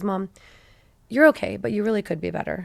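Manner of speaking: mock dry, dead-serious, straight-faced voice, no joking. Retelling a child's reply about being a good student: imitating a straight-faced reply. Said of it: "he said with a straight face".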